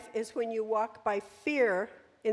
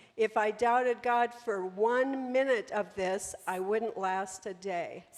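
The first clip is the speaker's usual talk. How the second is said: ordinary talk, nothing marked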